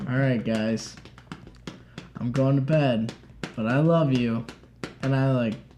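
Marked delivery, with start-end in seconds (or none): 0.1-4.5 put-on boozy, heavily drunk-sounding speech. Retelling a drunk dad saying goodnight by the fire: imitating drunk speech. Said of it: "he was super drunk and he's like".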